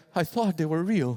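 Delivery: mock disappointed old man voice. Retelling a grandpa's line as his fake notifications get deleted: imitating disappointed grandpa. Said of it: "I just see my grandpa disappointed".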